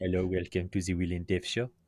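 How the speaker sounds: silly put-on French accent. Trying out an intro for the show, in a silly Pepe Le Pew French accent. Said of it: "do a silly French accent".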